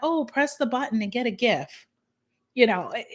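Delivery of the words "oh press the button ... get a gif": ordinary delivery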